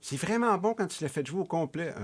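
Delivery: high, made-up, put-on motherly voice. Telling listeners what his mother said, imitating his mother's voice. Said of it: "quand j'imite ma mère, je prends ce voix-là".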